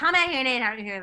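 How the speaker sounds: half-shouted, mildly scolding yell. Retelling a housemate's demand to eat dinner together: imitating someone yelling. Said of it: "yelled at me".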